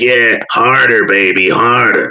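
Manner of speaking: croaky, frog-voiced, drawn-out New England drawl. Imitating a woman he hated in a made-up bedroom scene: imitating a woman's croaky New England accent. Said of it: "disgusting New England fucking accent frog voice of hers".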